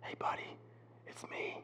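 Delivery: very soft, breathy, hushed whisper. Describing Jesus speaking through every passage: imitating a whisper. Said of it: "whispering at us saying".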